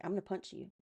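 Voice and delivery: whispered, cool-headed and dead calm. Retelling how a guy threatened a protesting kid: imitating a calm threat. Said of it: "Says it so calm".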